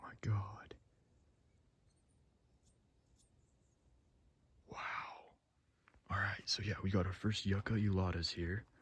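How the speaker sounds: hushed whisper. Not wanting to scare away the hummingbirds all around, whispering. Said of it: "I'm trying to whisper".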